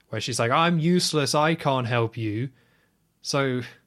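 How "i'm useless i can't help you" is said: ordinary talk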